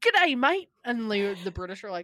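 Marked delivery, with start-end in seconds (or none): 0.0-0.7 put-on Australian voice, higher and louder. Joking that all Australians are happy and good looking: imitating Australians. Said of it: "They're all like".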